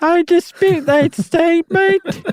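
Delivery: very high, slow, put-on British accent. Voicing what rival precision dancers would say, in a British accent. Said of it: "But they would say it with a British accent".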